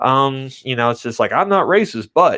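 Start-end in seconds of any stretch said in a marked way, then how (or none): 1.3-2.4 strong put-on Southern accent, pitched up. Mocking people who claim they aren't racist: put-on Southern accent. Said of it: "in a much more Southern accent".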